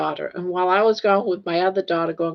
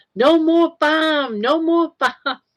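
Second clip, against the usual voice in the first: mock slow, repeated, drawn-out, high-pitched shouting; 10 semitones higher, 4 dB louder than usual. Retelling how her husband kept yelling at the refrigerator, retelling his yell. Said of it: "he's yelling".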